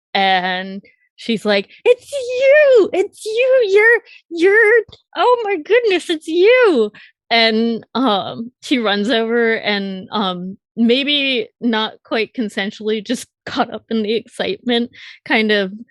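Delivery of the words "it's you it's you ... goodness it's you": very high scream melting into joyful laughter. Voicing a psychic who recognizes a doll player: joyful screaming with laughter. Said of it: "screaming, like, laughter and, like, joy".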